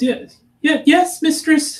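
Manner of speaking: very high, squeaky little goblin voice. Repeating what a goblin says to its mistress, in a high, squeaky goblin voice. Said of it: "in this high, squeaky voice that I can't do".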